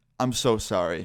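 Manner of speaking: mock tearful, crying voice. Retelling a phone call in which she apologized, imitating someone crying. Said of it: "And she's, like, crying".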